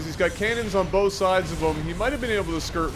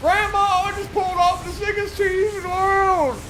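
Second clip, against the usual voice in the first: put-on, very high old-lady grandma voice; 14 semitones higher than usual. Speaker imagining a player calling his grandmother, in a grandmother voice. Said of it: "you were going for the grandmother voice".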